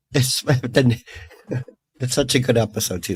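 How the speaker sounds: giggly, laughing, drawn-out delivery. Talking about a tv episode with the others, getting giggly. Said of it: "I'm getting giggly now".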